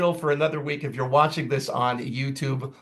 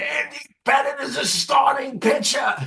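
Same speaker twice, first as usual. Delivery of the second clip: very high, shrill, furious, angry yelling; 11 semitones higher than usual. Recalling a radio host's classic caller exchange about a pitcher, imitating Mike Francesa yelling. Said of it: "he starts yelling".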